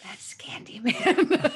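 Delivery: whisper full of awe. Retelling seeing a horror actor at a convention: imitating own awed whisper.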